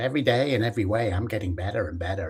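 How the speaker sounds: put-on American accent. Recalling an eighties self-help catchphrase, saying it in a bad American accent. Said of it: "it was always spoken in a bad American accent".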